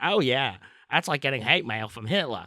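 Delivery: put-on cartoon character voice. Reading a Seth MacFarlane quote aloud: Peter Griffin voice. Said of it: "I'm going to try to do this in the Peter voice".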